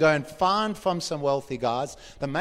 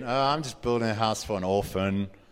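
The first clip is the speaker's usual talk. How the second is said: low, mopey voice; 5 semitones lower than usual. Describing someone asked what they are doing, the speaker answers: mopey Eeyore voice. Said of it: "Spoken in like an Eeyore voice".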